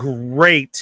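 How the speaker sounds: heavy, fake-sounding stress on "great". Showing how to say the line to Tommy again, with stress on 'great'. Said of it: "Have a like emphasis on great".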